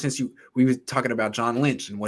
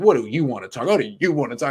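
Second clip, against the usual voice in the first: bold, confident delivery; 3 semitones higher, 5 dB louder than usual. Contrasting a coach who stands with his chest puffed out: imitating DeMeco Ryans, chest puffed out. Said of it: "stands up there with his chest puffed out".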